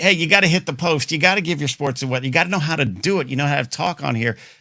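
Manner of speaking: put-on cranky, complaining old radio announcer voice. Acting out how a grumpy old radio man complains about newcomers: imitating a grumpy old radio man.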